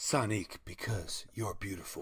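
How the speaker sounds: commercial announcer voice, selling tone. Pretending the creature's name is a hair product: hair product commercial voice. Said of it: "That's how you end the commercial".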